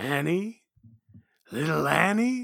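eerie, creepy alien creature voice. After reading a sign-off, the speaker repeats the name in a creepy Watto voice. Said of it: "why do you sound so creepy when you say that".

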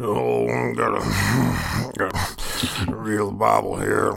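very slow, creaky, rough, drawn-out drawl. Trying out an impression still being worked on: Jeff Bridges impression. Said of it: "Jeff Bridges is like a".

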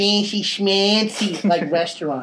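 put-on New York accent. Mid-conversation, the speaker deliberately slips into a New York accent. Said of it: "Gotta say it like New York".

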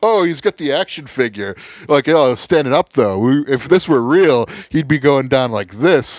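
loud, high scolding mock voice.

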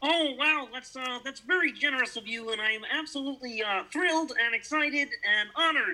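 very high-pitched puppet-frog character voice. Accepting a compliment about being Kermit, answering as Kermit the Frog. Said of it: "such a good Kermit".

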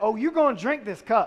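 mocking, put-on sarcastic, cutting tone. Retelling Jesus turning it into an insult, a mother's mock insult. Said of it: "like only your mother can, turns it into an insult and says".

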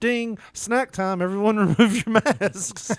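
high, slow airline announcement voice.

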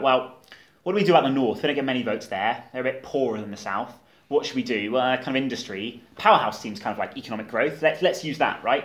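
plain

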